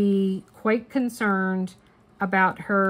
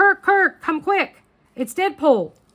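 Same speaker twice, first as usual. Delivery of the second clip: acted urgent, hurried yell, pitched high; 9 semitones higher, 4 dB louder than usual. Retelling calling someone over to see a trailer during the Super Bowl, retelling a yell. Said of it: "So I start yelling".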